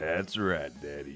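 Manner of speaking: cowboy-like voice. In a role-play, a character answers a partner's question, in a cowboy voice. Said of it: "You sound like a cowboy or something".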